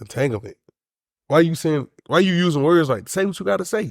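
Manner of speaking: mock wounded, hurt voice. Retelling a man's words from the Red Table Talk: imitating a hurt man. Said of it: "you heard it in his voice".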